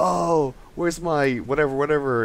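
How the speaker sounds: high, complaining arguing.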